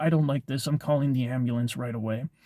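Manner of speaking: usual speaking voice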